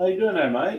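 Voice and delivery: put-on Australian accent, pitched very high. Greeting someone as mate: put-on Australian accent. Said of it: "How's my uh, Australian accent there, ... Talk like this all the rest of the time".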